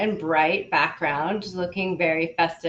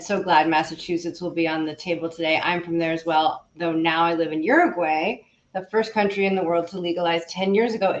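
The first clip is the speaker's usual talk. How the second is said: ordinary talk, nothing marked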